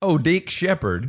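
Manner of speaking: very high, loud put-on voice. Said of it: "that was stereotypical".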